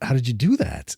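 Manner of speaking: plain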